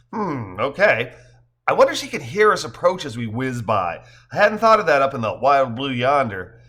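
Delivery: ordinary delivery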